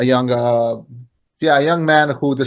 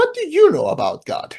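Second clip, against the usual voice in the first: very high mocking repeat.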